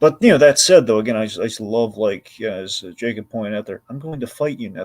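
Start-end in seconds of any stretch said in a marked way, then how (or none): 3.9-4.8 much quieter, soft delivery. Recapping a show scene, quoting a character's line as he says it quietly. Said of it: "The way he says it all quietly".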